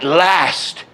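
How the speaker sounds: big stress on the vowel of "last". Demonstrating where the sentence accent falls, with stress on 'last'. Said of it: "So last is your hit".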